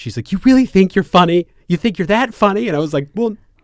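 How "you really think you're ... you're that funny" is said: very loud, booming, high mom voice. Retelling what their mom said to them, imitating mom's voice. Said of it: "this is my mom's voice".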